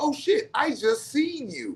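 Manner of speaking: drawn-out, high, swooping, thrilled outburst. Retelling a friend's story of suddenly realizing something: imitating someone getting excited. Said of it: "he's getting all excited".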